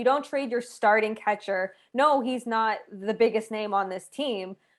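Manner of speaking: plain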